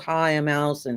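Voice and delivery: flat, unsmiling delivery. Coaching designers on meeting people, showing the wrong way: an unsmiling greeting. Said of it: "no one's going to want to talk to you".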